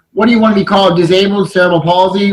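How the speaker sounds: normal talking voice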